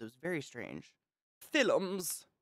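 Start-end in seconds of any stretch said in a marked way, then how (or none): 1.5-2.2 put-on old Hollywood transatlantic film-star mid-Atlantic accent. Describing the accent from old Hollywood films: 'films' in a mid-Atlantic accent. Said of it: "Films, they would say".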